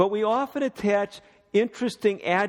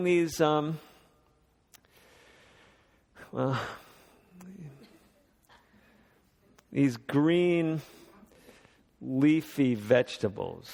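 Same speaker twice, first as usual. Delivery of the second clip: hesitant, reluctant, grudging drag, unenthusiastic; 6 semitones lower, 4 dB quieter than usual. Recalling vegetables served at the table as a child: putting on childhood reluctance. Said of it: "I'm trying to say that with some of the enthusiasm that I had when I was a child".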